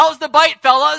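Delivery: very high, loud, jokey, cheery, teasing voice.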